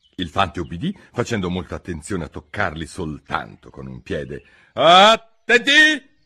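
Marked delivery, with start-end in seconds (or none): 4.8-6.0 piercing, very high and very loud shriek. The queen addressing the three gardeners, shrieking. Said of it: "strillò la regina".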